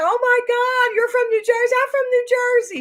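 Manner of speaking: mock delighted, thrilled gush, very high. Retelling a shop worker's surprise at a shared home state: imitating someone excited. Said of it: "She was so excited".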